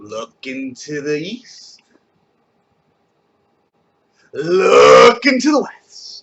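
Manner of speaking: very slow, drawn-out delivery.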